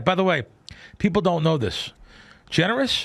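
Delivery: ordinary talk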